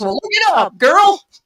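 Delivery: rowdy western voice. Retelling a dream, speaker quotes a man in a weird, rowdy western voice. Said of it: "he talked like that in this weird, like, westerny, rowdy voice".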